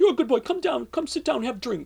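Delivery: put-on thick, heavy Polish accent, rattled off fast. Speaker retells what an older woman said to him, heavy Polish accent. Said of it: "she had a heavy Polish accent".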